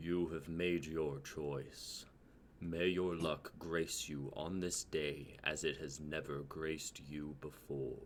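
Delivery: very low, very soft, echoing, rumbling beast voice. Storyteller voices the beast speaking from the core of the mountain, rumbling and echoing. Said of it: "the rumbling, echoing voice of the beast".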